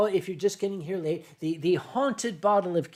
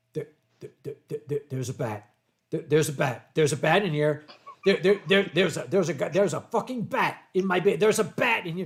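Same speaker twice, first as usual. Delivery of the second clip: put-on panicked stammer, rising, stumbling, repeating words; 3 semitones lower than usual. Retelling a split-screen call, imitating Boozy freaking out. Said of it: "he started freaking out".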